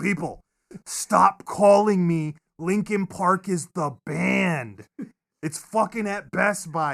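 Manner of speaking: acted, loud, fed-up, pissed-off, slow, drawn-out rant. Recalling a free show, speaker acts out the frustrated radio guy: imitating a pissed-off radio guy. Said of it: "the radio guy just being pissed".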